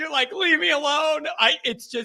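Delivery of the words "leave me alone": mock crying, high, weepy, tearful voice. Picturing the caller's saturday night and acting out his reply: imitating someone crying. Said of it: "And you're just, like, crying".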